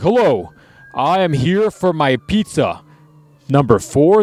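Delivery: very slow put-on masked voice, each word dragged. Joking about ordering pizza in a villain mask: put-on Kylo Ren voice. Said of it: "You're like".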